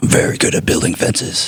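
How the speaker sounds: dead-serious superhero character voice. Repeating another speaker's line about fences: imitating Batman voice. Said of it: "say that like you're Batman".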